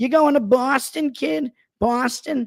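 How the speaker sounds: Long Island-accented speech. Showing how a mother would talk about Boston, in a put-on Long Island mother accent. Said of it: "that's like if a Long Island uh, mother is talking about Boston".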